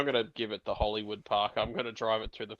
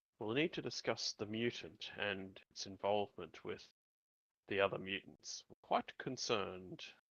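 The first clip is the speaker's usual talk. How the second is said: speaking in a hushed, quiet voice; 8 dB quieter than usual. A player speaking in character, in a hushed voice. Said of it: "and I sort of hushed my voice".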